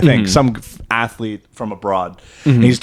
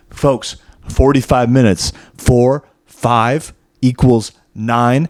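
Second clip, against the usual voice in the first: play-acted dead-serious, earnest, straight-faced deadpan delivery. Retelling a video of a guy explaining a theory: imitating a straight-faced delivery. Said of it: "this guy with a straight face goes".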